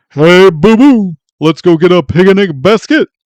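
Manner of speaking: drawn-out, big and loud. Testing the claim that two cartoon voices are the same, doing a Yogi Bear voice. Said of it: "is the exact same as Yogi Bear".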